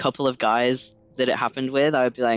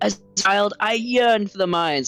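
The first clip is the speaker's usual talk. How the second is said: slow, deliberate, drawn-out put-on voice, pitched up; 7 semitones higher than usual.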